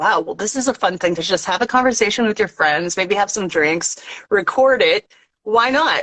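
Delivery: normal talking voice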